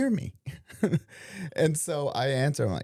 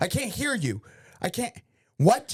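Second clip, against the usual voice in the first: put-on annoyed, accusing tone, pitched up; 6 semitones higher than usual. Imitating how the other person says they can't hear: mock-annoyed, blaming tone. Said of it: "you don't say it nice. You say it like it's my fault".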